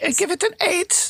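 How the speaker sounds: put-on phony British accent, high-pitched. Mocking the other speaker during an argument over a rating, in a phony British accent. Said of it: "With your phony British accent".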